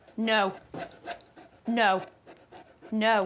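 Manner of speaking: strong, stern delivery. Showing an owner how to tell the dog no, firm but not shouty. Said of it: "you need to be a bit stronger, not shouty".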